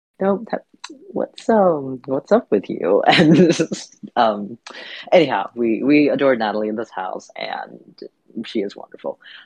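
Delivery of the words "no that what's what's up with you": high, gentle nice tone. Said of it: "my therapist sort of very nicely was like".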